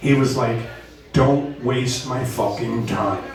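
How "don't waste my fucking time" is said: put-on English-accented speech. Quoting a man who told them to go home and prepare, in an English accent. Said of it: "in this beautiful English accent".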